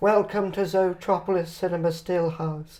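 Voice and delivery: slow droll put-on voice. Showing an early voice idea for a puppet character: Alfred Hitchcock voice. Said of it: "an Alfred Hitchcock kind of voice".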